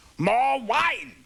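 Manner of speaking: shouted, imperious, commanding voice.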